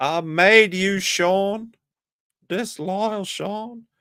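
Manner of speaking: squeaky put-on voice, very high, very slow, dragged out. Doing a Ralph voice at Sean: Ralph voice. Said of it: "I sound like Ralph".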